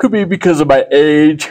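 talking through a yawn. Speaker musing about online platforms, yawning while talking. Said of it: "Sorry, I'm yawning".

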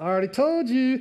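put-on irritated, frustrated, sarcastic tone. Retelling the healed blind man's retort to questioners: imitating frustrated sarcasm. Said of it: "he's getting frustrated".

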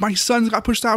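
shrill, very high, pissed-off angry yell. Retelling his wife yelling at the security guards: imitating his wife yelling angrily. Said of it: "My wife's getting pissed, yelling at the security guards".

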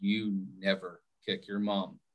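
very fatherly way of speaking, low and soft. Parent recounting telling their child off that night, retelling a fatherly voice. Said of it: "in a very fatherly voice".

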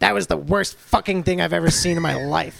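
loud, rough, creaky voice pushed out. Contrasting a trainee with his trainer: imitating Seth Rollins. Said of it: "where Seth is like".

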